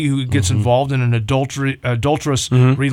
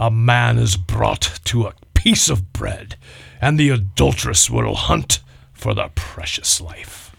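slow, rough, dramatic pirate-style reading voice; 4 semitones lower than usual. Reading a Bible verse aloud, sounding like a pirate. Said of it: "that sounded Like a pirate".

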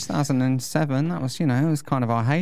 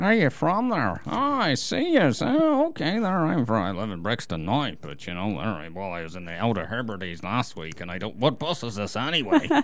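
put-on, sing-song Northern Irish accent; 2 semitones lower than usual. Practicing an accent they are still working on, in a Northern Irish accent. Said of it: "your northern irish accent is getting better".

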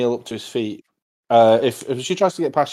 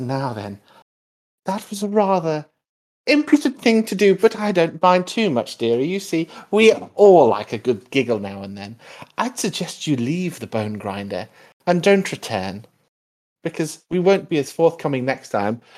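hag character voice, higher; 4 semitones higher than usual. Voicing the hag as she curses a player character: voicing the hag. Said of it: "she says".

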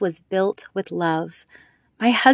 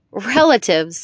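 crying out, exclaiming; 4 dB louder than usual. A woman reacts to the narrator's refusal of her gift, exclaimed. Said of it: "she exclaimed".

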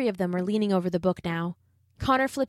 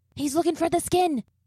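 sharp, high, hissed delivery; 9 semitones higher than usual. Watching a man through a crack in the door, a boy warns the others, hissed. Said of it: "hissed Liam".

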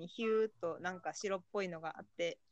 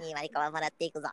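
put-on alien voice, lower and louder; 3 semitones lower, 5 dB louder than usual. Acting out an alien taking someone away: put-on alien voice. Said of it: "声真似というか".

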